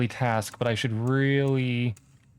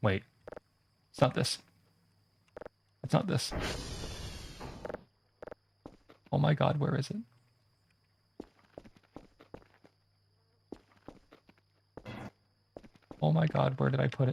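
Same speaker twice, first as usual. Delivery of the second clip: panicked, frantic voice; 5 dB quieter than usual. Searching frantically for a misplaced book on stream, panicking. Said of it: "I'm panicking".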